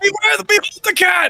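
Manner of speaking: shrill, very high screaming. In the game, the player's character screams at the cat, screaming. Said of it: "And I scream at the cat".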